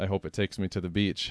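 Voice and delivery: ordinary talk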